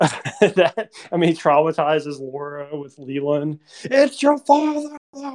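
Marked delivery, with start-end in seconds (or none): 3.8-5.4 acted-out, very high-pitched screaming. Recounting a scene where a character screams at Laura, retelling a scream. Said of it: "He's screaming at her".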